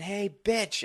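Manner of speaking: play-acted sharp, high-pitched shout. Retelling a story about a woman at a bar: imitating a woman yelling. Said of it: "this woman yelling".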